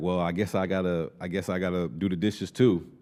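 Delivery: play-acted, goofy, sarcastic, put-upon tone. Retelling what she says while cooking: imitating a sarcastic goofy remark. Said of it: "she could say it in a sarcastic or a goofy way".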